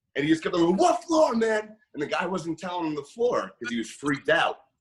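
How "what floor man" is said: shrill scream pitched very high. Retelling a man in an elevator screaming at someone: imitating a man screaming. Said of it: "starts screaming".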